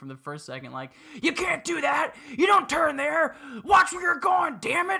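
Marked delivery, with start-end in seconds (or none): 1.2-5.0 very loud, shrill screaming. Speaker recalls their dad during their first drive on a learner's permit: retelling dad screaming. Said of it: "he was just screaming at me".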